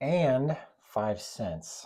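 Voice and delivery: and hit hard with strong stress. Reading a pricing word problem aloud, strong stress on 'and'. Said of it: "why did I stress the word and there?".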